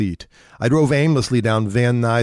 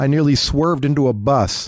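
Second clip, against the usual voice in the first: ordinary delivery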